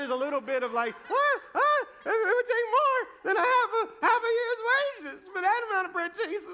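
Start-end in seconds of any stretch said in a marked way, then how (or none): 1.1-6.6 very high, anxious voice, cracking. Acting out Philip answering Jesus: imitating Philip's voice going high and cracking. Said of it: "the voice kinda goes high".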